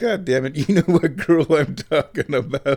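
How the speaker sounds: acted high, fed-up, exasperated outburst. Retelling his girlfriend's reply when he pretended not to know the girl, mock-exasperated. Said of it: "girlfriend exasperated at feigned ignorance".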